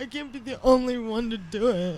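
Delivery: mocking imitation voice. Mocking how another person complains, who then objects: mocking imitation of someone. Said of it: "I don't sound like that".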